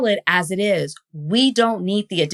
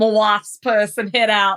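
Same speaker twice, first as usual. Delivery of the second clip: fake accent, Australian attempt, all Texan. Attempting an australian accent for the microphone: australian attempt sounding texan. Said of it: "was all Texas and no chill".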